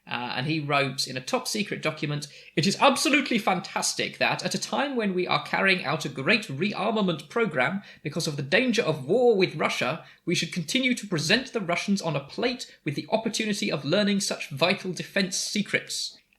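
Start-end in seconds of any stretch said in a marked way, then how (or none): 2.5-16.1 pitched-up posh officer impression. Reading an official's top secret document aloud: posh Air Chief Marshal voice. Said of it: "that's my Air Chief Marshal voice".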